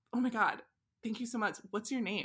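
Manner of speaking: plain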